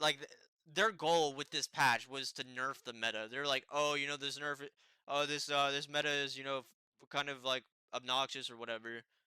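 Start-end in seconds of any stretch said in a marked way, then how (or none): none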